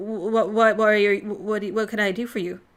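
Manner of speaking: growled creature voice, tripping over words. A narrator voices a hooded figure addressing the group, in a growling voice. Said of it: "in a growling voice asks you".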